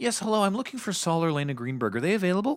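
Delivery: acted prim courtesy, very high-pitched, overly polite. Retelling a character's phone call to a doctor's house, imitating a polite caller. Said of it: "Just like really politely".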